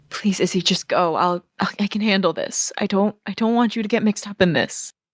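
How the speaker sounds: voiced stage whisper. Voicing a character pleading with a friend to leave: whisper. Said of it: "you hear her kind of just whisper".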